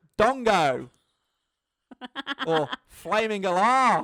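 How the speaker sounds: booming, very loud, put-on Australian accent. Delivering the punchline the other speaker set up, in an Australian accent. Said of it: "another Australian accent punchline here".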